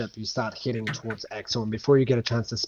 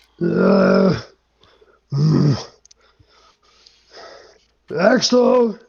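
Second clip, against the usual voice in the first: put-on high, loud, little child's calling voice; 6 semitones higher, 8 dB louder than usual. Voicing a character calling to a player: childlike voice. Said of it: "a familiar childlike voice go".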